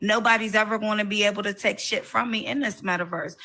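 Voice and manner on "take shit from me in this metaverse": normal talking voice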